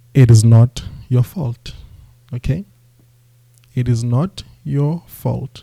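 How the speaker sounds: very slow, word-by-word delivery. Addressing people trying to get entry-level software jobs, spoken very, very slowly. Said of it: "I'm going to say this very, very slowly".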